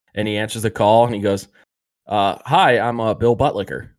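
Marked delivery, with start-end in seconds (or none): none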